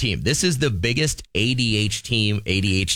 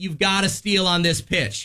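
high, slow yell across a distance. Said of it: "then I yell across the diamond".

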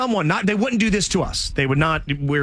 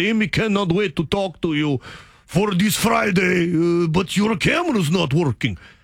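put-on slow, heavy Russian accent laid on thick; 4 semitones higher than usual. Retelling a scam call from an assistant: thick Russian accent. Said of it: "has a very thick Russian accent".

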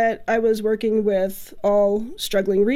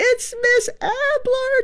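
mock very high, excited childlike shrieking scream. Recalling arriving at the door as the kids look up, retelling a scream. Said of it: "they start just screaming".

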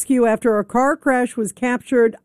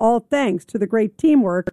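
plain

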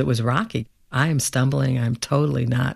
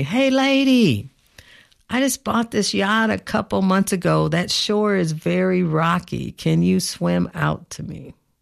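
high call with the word "lady" drawn out; 6 semitones higher than usual. Retelling what the yacht owner called back to shore: imitating a man yelling. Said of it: "And he yells to me".

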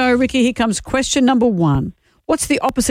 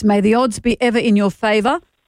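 ordinary talk

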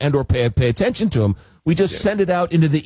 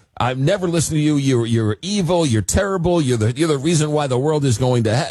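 normal talking voice

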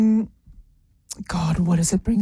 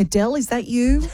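ordinary delivery

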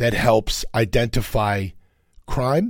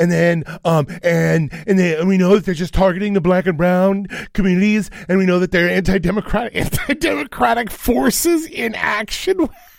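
put-on uptalk voice rising at ends, higher; 8 semitones higher than usual. Speaker mocking how a certain group always talks: mocking stereotypical voice, uptalk. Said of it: "they always go up at the end".

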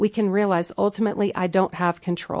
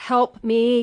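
put-on terrified scream, higher pitch; 4 semitones higher than usual. Recalling screaming for help during a ride, retelling a terrified scream. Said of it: "I was screaming like for my life".

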